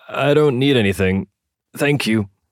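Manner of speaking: strained croak, holding back pain. Narrator reads Jack's reply through a door: croaking, hiding pain. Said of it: "Attempting to hide the evident pain in his voice, Jack croaked".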